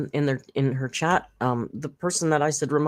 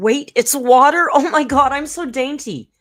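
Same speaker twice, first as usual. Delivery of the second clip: put-on very high, loud, shrieking, panicked freak-out; 11 semitones higher, 7 dB louder than usual. Retelling how she reacted on finding her drink was water: imitating someone freaking out. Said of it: "she flips the fuck out".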